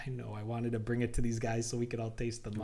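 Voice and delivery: ordinary talk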